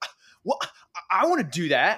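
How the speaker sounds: very loud, high big-sister voice. Retelling what an older sister said when invited on: impression of older sister. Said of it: "my terrific impression of my older sister".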